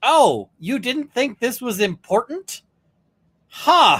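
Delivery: mild disbelief. Describing how a man reacts to something, mock mild incredulity. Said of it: "express incredulity without getting into like being a shit".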